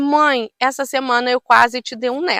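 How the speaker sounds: normal talking voice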